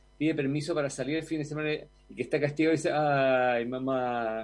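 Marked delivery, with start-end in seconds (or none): 2.9-4.5 ay mamá with pitch sinking downward. A punished child asking mom for weekend permission, falling pitch on 'ay, mamá'. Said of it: "Es como descendiente".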